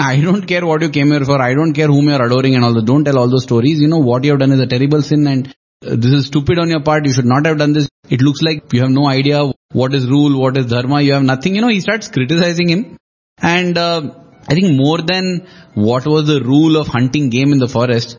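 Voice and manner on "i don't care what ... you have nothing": usual speaking voice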